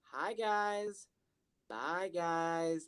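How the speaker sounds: very quiet, slow, menacing murmur. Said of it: "he's starting to turn a little more menacing".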